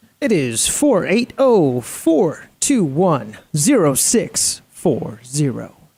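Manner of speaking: radio-announcer voice, broadcast-style delivery. Reading out a phone number for someone to save, in a radio voice. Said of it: "That's a fantastic phone uh, radio voice".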